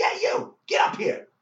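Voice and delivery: very high, loud, shouted yell. Retelling Don Rickles calling him up onto the stage, imitating Don Rickles yelling. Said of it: "And he yells at me again".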